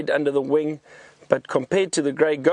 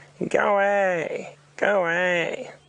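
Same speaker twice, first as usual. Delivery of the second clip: pitched up like a calling bird; 5 semitones higher than usual. Describing a bird, the speaker attempts a grey go-away bird call impression. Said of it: "see if I can do my grey go-away bird impersonation".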